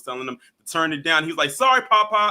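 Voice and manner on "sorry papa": put-on loud, high-pitched voice like a child. Retelling a grown man answering his grandfather: imitating a childlike apology. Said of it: "almost like a child would".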